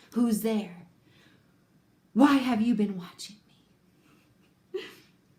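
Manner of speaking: hissed voice. A creature hidden in shadow calls to someone who has been watching it, hissing. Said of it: "The creature's voice hissed from the shadow".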